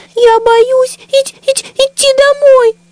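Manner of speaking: whimpering, plaintive. The little bundle, told it should long be asleep, answers with a plaintive squeak. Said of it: "жалобно пропищал комочек".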